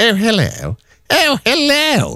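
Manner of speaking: very high, posh telephone voice. Imitating a work colleague answering the phone, in a posh telephone voice. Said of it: "but the posh telephone voice".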